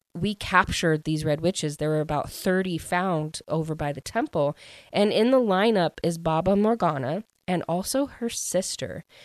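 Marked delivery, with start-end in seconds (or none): none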